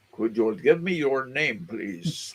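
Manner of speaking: Transylvanian accent on every word. Trying out the accent they would be working on: put-on Transylvanian accent. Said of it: "Transylvanian accent".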